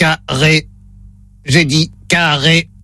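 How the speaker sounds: low, monotone, mechanical automated-system robot voice. Playing the robot in a word-repeat test on a call, in a robot voice. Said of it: "Voix de robot enclenchée".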